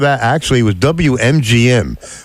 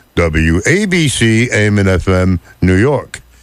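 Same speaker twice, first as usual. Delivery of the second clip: put-on radio announcer voice, much slower; 3 semitones lower than usual. Telling how he imitated the radio announcer for his friends: station announcer impression. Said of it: "I had to imitate the dude".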